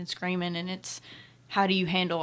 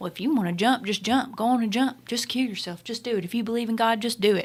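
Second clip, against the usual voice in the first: loud, angry yelling; 4 semitones higher, 4 dB louder than usual. Retelling what angry campers yelled at the man in the tree: imitating angry campers yelling. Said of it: "yelling at him".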